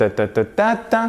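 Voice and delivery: ta ta ta ta ta with even French rhythm, equal beats. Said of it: "notre rythme".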